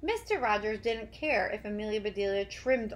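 plain

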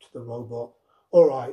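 plain

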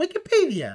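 put-on, very high-pitched British accent. Retelling a surprised man's reply in a video: british accent. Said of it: "le sale lo británico".

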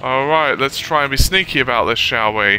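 mocking, sarcastic tone. Playing a zombie game and losing interest: sarcastic. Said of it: "he says sarcastically".

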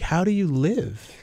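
slow, straight-faced delivery. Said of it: "with a straight face".

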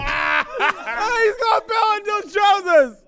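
loud shout mixed with laughter.

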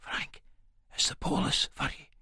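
hushed, very quiet, worried whisper. Reading a story aloud, her line after a knock at the door: whisper. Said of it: "she goes in a fucking whisper".

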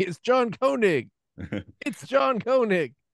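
high-pitched, insistent, repeated screaming. Speaker retelling a man in an argument, imitating him screaming. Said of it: "he just started just screaming".

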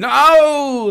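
very high, very loud, stretched-out no. Imitating someone else's reaction: Darth Vader "No!". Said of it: "like Darth Vader".

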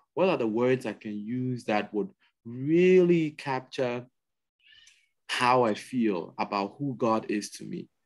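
ordinary talk

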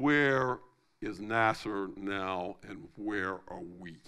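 put-on deep Southern Arabian accent. Retelling what a man said about Nasser, in a deep Saudi accent. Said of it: "he put it in that deep Saudi, I like to think, Southern Arabian accent".

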